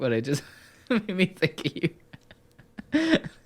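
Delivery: talking through laughter. Explaining why a video clip reminded them of someone: laughing while talking. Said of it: "I'm laughing too much".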